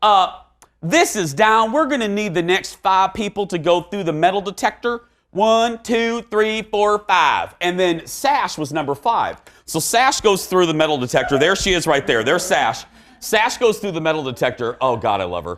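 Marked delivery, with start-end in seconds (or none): 0.0-7.5 put-on Southern accent, pitched up, agent voice. Retelling what a TSA agent said at airport security, Southern accent. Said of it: "They all have Southern accents".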